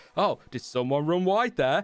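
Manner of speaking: mock passive-aggressive manner, put on. Quote what Crofty says when somebody runs wide, in a passive-aggressive Crofty impression. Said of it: "passive-aggressive moment ... picking up the tone".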